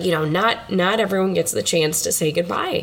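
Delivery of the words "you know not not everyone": plain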